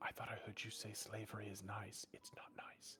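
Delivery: very quiet, hushed whispered aside. Speaking in character to another character at the table: whispering in character. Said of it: "he's gonna whisper to Bonkin".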